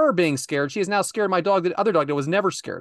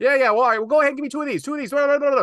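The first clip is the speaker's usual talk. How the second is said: fast, high, rattled-off auctioneer-style patter; 7 semitones higher than usual. Retelling a customer buying lottery tickets ahead in line: imitating someone talking like an auctioneer. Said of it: "like an auctioneer".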